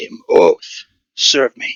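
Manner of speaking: slow, commanding, growl-laced roar. Voicing a dark figure demanding service: growlish roar. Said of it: "a sort of growlish roar".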